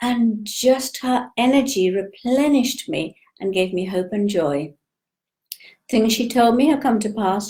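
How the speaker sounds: ordinary talk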